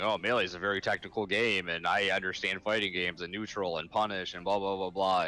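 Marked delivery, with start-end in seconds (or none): none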